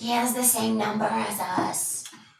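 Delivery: very slow, raspy, failed stage whisper. Whispering aside to another player at the table: bad whisper, raspy not quieter. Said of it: "you're very bad at whispering".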